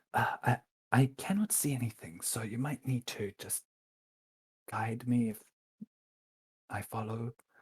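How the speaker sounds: quiet, hushed half-whisper in character voice. Speaking in character to a companion in the dark: half-whispering in character. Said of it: "just gonna whisper to Cass and go".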